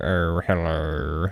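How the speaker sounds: hesitant, low put-on character voice. Showing the activation phrase for doing a voice: Alan Rickman voice. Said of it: "an Alan Rickman".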